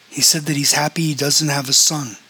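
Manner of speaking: ordinary delivery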